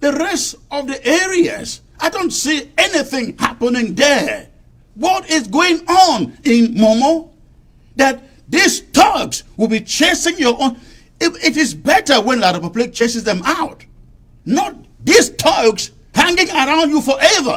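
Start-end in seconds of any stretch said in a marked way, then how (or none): 5.0-17.6 heated, impassioned raised voice with swooping pitch. Host speaking about momo before his monologue, in a raised voice. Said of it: "My apologies for raising my voice".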